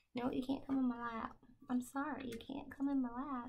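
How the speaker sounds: ordinary speech in a Southern drawl. Telling Betty Lou she can't come into the lap: Southern accent. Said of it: "talk to her with a Southern accent".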